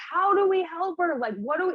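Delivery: high scream, sobbing through tears. Retelling crying in bed that night, imitating own screaming. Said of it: "screaming, like".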